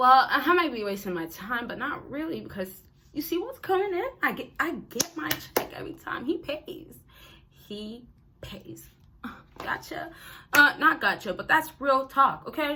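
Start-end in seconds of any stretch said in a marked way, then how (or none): 0.3-8.9 put-on speaking in a girl's voice. Acting out the woman answering her friend: imitating a woman's girl talk. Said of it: "let's go back to the girl".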